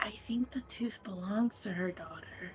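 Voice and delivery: soft, confiding, whispered aside. Speaking in character to a companion beside a dragon: whispering. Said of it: "I whispered it to Una".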